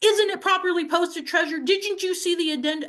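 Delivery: high-pitched, play-acted shouting. Retelling how the city attorney questioned them: imitating someone yelling. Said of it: "Why are you yelling at me?".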